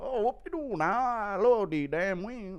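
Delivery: high, put-on tearful blubbering voice. Reading out a request, doing D C mock crying while eating wings. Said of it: "Impression of D C crying about food addiction while eating wings".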